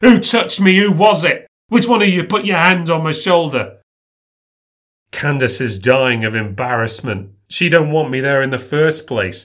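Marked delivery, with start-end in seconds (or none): 0.0-3.8 loud, high, frantic shouting. Retelling a moment of searching a crowd for who touched him: retelling own shouting. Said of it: "I start shouting".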